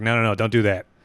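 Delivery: plain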